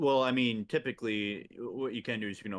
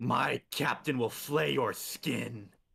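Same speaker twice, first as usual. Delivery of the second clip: rasped, raspy delivery; 2 semitones higher than usual. Voicing the bodyguard attacking an elemental: screaming threat in character. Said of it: "she screams out".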